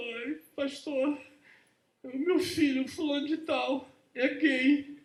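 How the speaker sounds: high, tearful, pleading voice.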